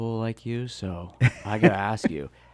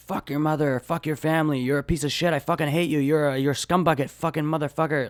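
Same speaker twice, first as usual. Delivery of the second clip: high-pitched, venomous, furious ranting; 5 semitones higher than usual. Retelling how a guy screamed at a jar: imitating someone screaming. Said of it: "he screamed at it".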